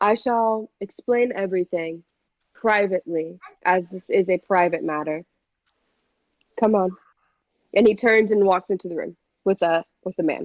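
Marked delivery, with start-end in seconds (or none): 0.0-7.0 lofty, regal, stately elven-lord voice. Voicing a regal elf who curls his lip at the group: regal elf voice. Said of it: "It's a very regal elf man".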